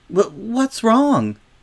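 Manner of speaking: anxious, worried voice, pitched very high. A girl asks another girl who has started crying, anxious. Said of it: "said Sweetie Belle anxiously".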